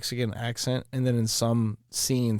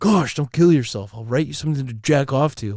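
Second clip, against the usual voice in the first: loud put-on dorky dweeb voice; 3 semitones higher, 7 dB louder than usual. Voicing a sentient chatbot as a dork: Napoleon Dynamite voice. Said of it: "It sounds like Napoleon Dynamite".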